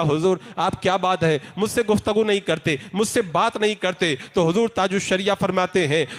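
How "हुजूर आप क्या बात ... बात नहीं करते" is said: ordinary delivery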